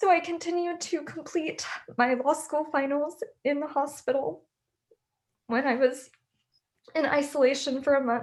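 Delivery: voice breaking through tears. Recounting cancer treatment during law school, the speaker keeps speaking while crying. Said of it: "I'm sorry if I'm crying".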